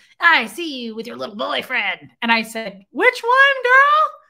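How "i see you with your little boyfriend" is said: wicked fairy-tale witch voice. Retelling what a woman said to the speaker: Wicked Witch of the West voice. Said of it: "It sounded like the Wicked Witch of the West".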